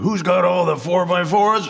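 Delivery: very high, barked drill sergeant call. Retelling a car commercial job: imitating a drill sergeant voice. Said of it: "someone to do the voice of ... a drill sergeant".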